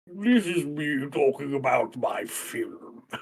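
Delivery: very slow put-on drawl, every word dragged out. Talking about film trailers, doing an Alfred Hitchcock impression. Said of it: "What an impersonation!".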